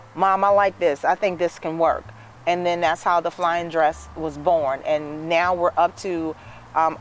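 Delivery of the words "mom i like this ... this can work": ordinary talk, nothing marked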